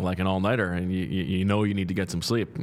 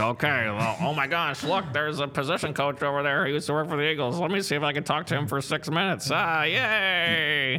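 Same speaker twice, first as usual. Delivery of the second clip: pitched-up teasing send-up, stretched-out "yay"; 7 semitones higher than usual. Talking about the combine, the speaker acts out the collective media. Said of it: "Is that your impression of yourself?".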